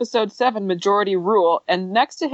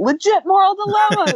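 shrill, very high-pitched screaming; 11 semitones higher, 3 dB louder than usual. Retelling what they always scream at the TV: imitating own screaming. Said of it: "I am always screaming".

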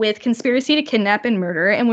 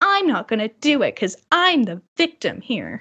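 mock cheeky, sassy, sing-song tone. Imitating how the prisoner would refuse, sassy Peter voice. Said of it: "was in a sassy".

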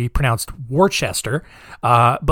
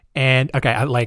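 usual speaking voice

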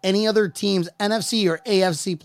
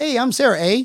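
mock Canadian accent saying "eh", higher; 5 semitones higher than usual. Teasing another speaker about sounding Canadian: put-on Canadian accent. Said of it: "if you just said A at the end of it".

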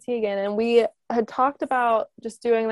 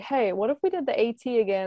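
half-kidding, jokingly tossed-out tone. On a freezing December hike, retelling a companion's joking suggestion. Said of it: "he's like started jokingly".

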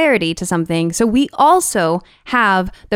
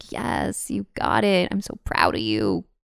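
warm tone brimming with relief; 12 semitones lower, 9 dB quieter than usual. Acting out a viewer whose character finally succeeds: acting relieved.

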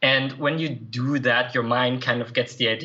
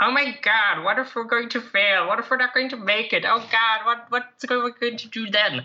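clumsy, bad, very high put-on character voice; 11 semitones higher than usual. Repeating your own head's worried thoughts over again, in Cartman voice. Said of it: "I just repeat that over again in Cartman's voice".

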